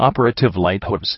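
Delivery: plain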